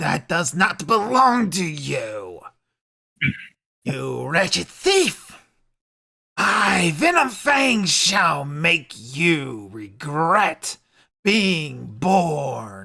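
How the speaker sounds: dragon villain voice with wide pitch swings. A game master voices the dragon confronting a player holding its axe, in Venom Fang's dragon voice. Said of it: "And then he sees the axe you have and goes".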